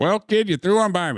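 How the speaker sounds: put-on Chicago accent. Quoting a movie character's line in a put-on chicago accent. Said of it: "'Cause Maze's Chicago accent?".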